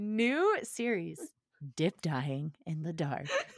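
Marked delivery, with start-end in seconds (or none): 1.7-3.3 sultry, seductive, low, sensual voice. Trying to sound sensual for a co-speaker, in a low sensual voice. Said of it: "Your voice got like even lower than mine".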